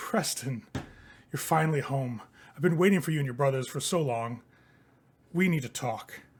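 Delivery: voice of a corpse. Storyteller voices a stranger's voice coming out of a body: corpse speaking voice. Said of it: "you hear this voice come out of the body".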